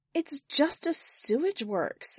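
unsure, tentative, hesitant delivery. A woman answers a man who snapped at her, still hesitant. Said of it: "still hesitant".

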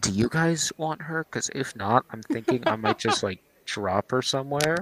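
hushed whisper. Asking the other players privately whether they want her: whispering. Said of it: "I'm gonna whisper to you guys".

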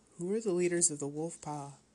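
ordinary delivery, nothing marked

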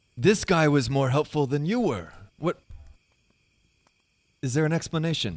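yelling, pitched high. In a role-play, a character berates a companion who didn't help: yelling from across. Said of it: "I'm yelling at him from across".

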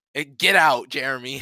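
plain

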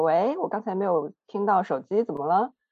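light, breezy, very relaxed, easy casual tone. Retelling calling a friend back after a missed call, retelling a very relaxed tone. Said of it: "我是用非常轻松的语气说".

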